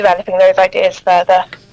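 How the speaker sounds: ordinary delivery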